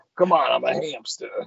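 put-on hamster voice with a Brooklyn kind of accent. Showing the voice he gave a hamster he picked up: brooklyn kind of accent. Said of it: "like a Brooklyn kind of".

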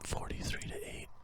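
hushed whisper. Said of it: "And I whispered it".

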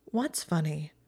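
ordinary delivery

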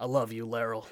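hushed, soft stage half-whisper. Smashing bottles together and speaking to laryl in character: half-whispering in character. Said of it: "I whisper".

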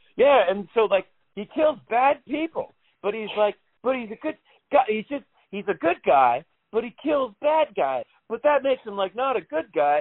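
put-on, very high, loud, rambling running talk. Speaker retelling how a guy spoiled Dexter for him: imitating loud talking. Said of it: "start talking really loudly".

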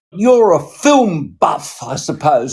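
very, very sarcastic, swooping tone. Retelling a director's answer to a question from the audience: imitating a sarcastic reply. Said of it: "He was very, very sarcastic".

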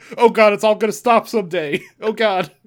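abrupt, sudden, loud, high-pitched outburst of yelling. Speaker recalls a favorite episode moment when Griffin suddenly broke his silence: imitating Griffin shouting. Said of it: "just started shouting".

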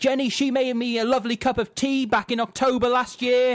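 acted-out, shrieking, very high-pitched screaming rant. Retelling to an audience how a director yelled out names over a film's opening credits, imitating someone screaming. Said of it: "he starts screaming".

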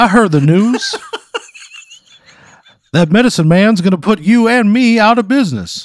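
loud, high-pitched, full cartoon voice. Retelling a man's remark about a rival putting them out of business; Foghorn Leghorn voice. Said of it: "He sounds like a like foghorn leghorn almost".

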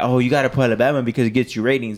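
ordinary talk, nothing marked

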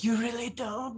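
quiet whisper. Playing a character answering a question, whispering the reply. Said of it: "I just whisper".

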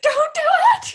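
super squeaky, high-pitched and loud. Recapping a scene and quoting Chuck's line, squeaky Chuck voice. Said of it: "he sounds like super squeaky".

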